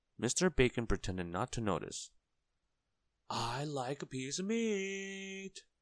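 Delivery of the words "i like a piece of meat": very high, slow shout with "meat" stretched. Reading a character repeating his order to a shopkeeper who ignores him, shouting. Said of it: "Mr. Noisy shouted".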